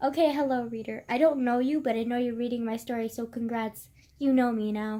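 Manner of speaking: ordinary delivery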